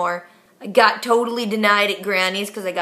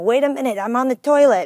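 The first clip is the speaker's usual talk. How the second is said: odd, put-on East Indian accent; 4 semitones higher, 3 dB louder than usual. Retelling kids making prank calls on speakerphone, weird Eastern Indian accent. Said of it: "with this weird Eastern Indian accent saying".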